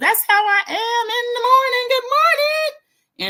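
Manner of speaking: mock very high, shrill, top-volume shout. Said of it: "Kelly's still at the top of her lungs".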